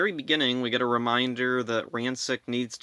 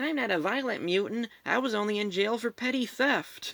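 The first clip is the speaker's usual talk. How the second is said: put-on odd, weird, very high-pitched childish voice; 10 semitones higher than usual. Recapping a scene where a revived mutant refuses to fight, weird childish mutant voice. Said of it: "this mutant has like a weird childish voice".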